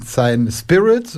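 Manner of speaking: "Spirit" stretched out slowly, with an ironic drawl.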